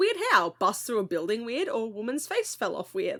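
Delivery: mock casual, unbothered, nonchalant offhand tone. Retelling how Karen answered Hen after her shift: imitating Karen nonchalantly. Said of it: "so nonchalant".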